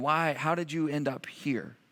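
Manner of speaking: fake soft, gentle voice. Retelling God's question to a man who ended up here, voicing God gently. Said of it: "God in gentleness and compassion and love saying".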